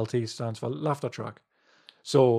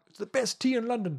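very high sitcom-style character voice; 11 semitones higher than usual. Quoting the original line, doing an impression of Rik from Bottom. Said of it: "an impression of, um, uh, the almighty Rick from Bottom".

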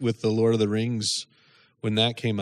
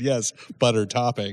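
ordinary talk, nothing marked

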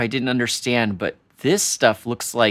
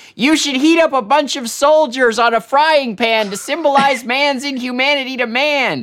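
acted-out, shrill, very high yelling; 12 semitones higher, 4 dB louder than usual. Retelling a scene from a book where the dad yells: imitating a dad yelling. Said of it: "his dad starts yelling".

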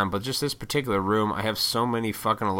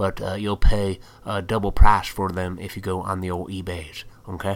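sudden fake country accent; 4 dB louder than usual. A collector addresses fellow nerds watching, in a put-on country accent. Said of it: "I just did a country accent for that".

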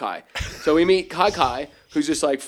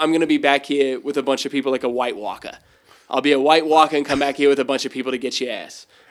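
plain

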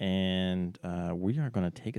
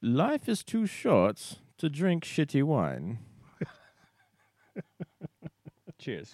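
put-on haughty, snooty voice, pitched up, swooping; 7 semitones higher than usual. Taking a turn at the toast, in a snob voice. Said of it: "let me get my snob voice going on".

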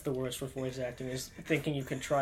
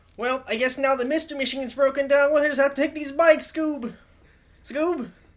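very high-pitched, loudly belted cartoon voice; 12 semitones higher, 12 dB louder than usual. Improvising a bike-ride scene in an assigned role: Shaggy voice. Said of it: "Shaggy from Scooby-Doo".

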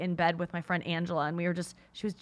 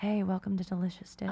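soothing TV host voice. Recalling a soothing TV sketch to friends, imitating the Delicious Dish host. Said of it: "you sound like her".

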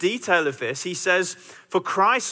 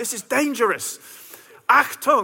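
mock scream, higher pitched; 4 semitones higher than usual. Retelling screaming at the group to hurry up the mountain: imitating screaming at the group. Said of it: "I started screaming at them".

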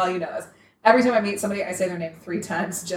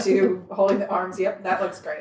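ordinary delivery

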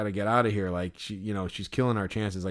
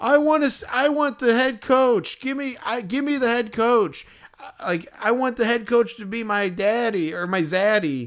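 mock yelling, much higher, slower; 13 semitones higher, 6 dB louder than usual. Recounting what a woman shouted at them: retelling her yelling. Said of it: "and then she's like yelling".

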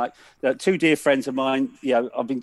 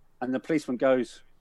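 ordinary delivery

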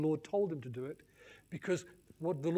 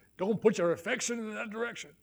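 pitched-up put-on American preacher voice; 5 semitones higher than usual. Speaker repeats their own advice, now in an american preacher voice. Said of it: "Sound like an American preacher".

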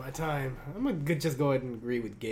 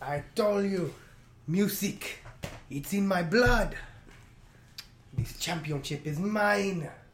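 bad, terrible put-on Mexican accent; 4 semitones higher, 3 dB louder than usual. After a 5-for-5 wwe music win, the new champion speaks in a terrible put-on mexican accent. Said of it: "You still have a terrible accent".

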